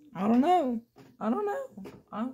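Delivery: voice cracking, breaking up very high. Reacting to a claim about tennis balls on an antenna, voice cracking. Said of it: "voice crack".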